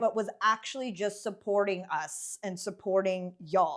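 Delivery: ordinary talk, nothing marked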